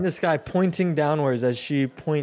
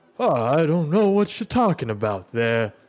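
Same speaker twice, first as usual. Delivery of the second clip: put-on elderly man character voice; 3 dB louder than usual. Game master voicing a character the players meet, elderly man character voice. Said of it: "it looks to be kind of this elderly man with this long beard, and says".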